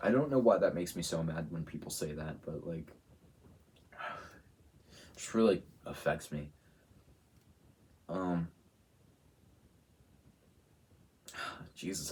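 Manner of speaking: choked-up voice catching with emotion. Reacting to hurtful comments people make, choked up. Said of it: "I got choked up".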